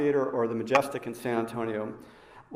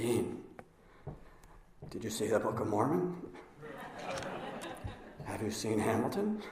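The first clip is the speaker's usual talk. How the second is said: very quiet, hushed, raspy, gravelly near-whisper; 3 semitones lower, 12 dB quieter than usual. Retelling what a man always says to him, in a quiet, gravelly voice. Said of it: "In that quiet, gravelly voice".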